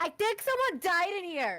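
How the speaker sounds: very high-pitched, clear calling out. Retelling how he called out on finding blood everywhere, in a very high-pitched voice. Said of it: "calls out in the most high pitched voice".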